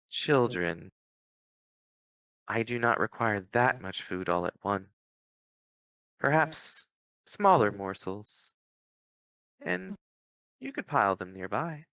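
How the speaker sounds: voice ringing out with an echo. Game master voices Mother speaking to the children as the log burns, Mother's voice ringing in minds. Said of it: "you do hear Mother's voice uh, kind of ring out through your minds".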